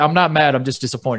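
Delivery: mock calm, disappointed manager voice. Retelling how the Tigers manager argued an obvious blown call: imitating Jim Leyland, disappointed not mad. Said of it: "Leland wasn't even mad".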